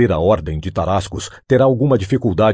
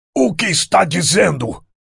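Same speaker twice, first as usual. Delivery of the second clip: very high, raw, rough shout; 11 semitones higher than usual. Reading a story aloud, a man reacting to a choking man's words: shouted. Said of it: "Bradou o outro".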